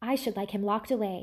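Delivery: ordinary delivery, nothing marked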